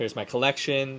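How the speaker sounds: plain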